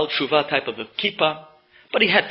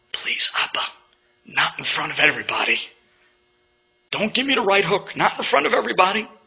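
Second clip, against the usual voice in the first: voiced stage whisper. Retelling pleading with a father in front of others: imitating own half-whisper. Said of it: "I whispered to my father".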